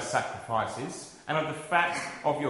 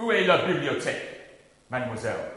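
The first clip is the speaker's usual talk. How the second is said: ordinary talk, nothing marked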